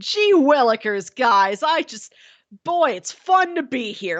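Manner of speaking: cartoonish, ridiculous, goofy character voice. Speaker describes a show character growing more cartoony, imitating his cartoony goofy voice. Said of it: "he does get more of this like cartoony".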